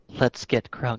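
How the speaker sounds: muttered under the breath. Acting out a character line in a game scene, muttered under the breath. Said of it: "Under my breath".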